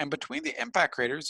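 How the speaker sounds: ordinary talk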